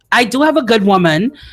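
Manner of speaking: ordinary talk, nothing marked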